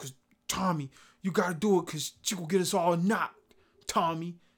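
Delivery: slow, tough-guy dramatic delivery. Speaker addresses Tommy in his Ghost voice: Ghost voice. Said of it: "that's my ghost voice".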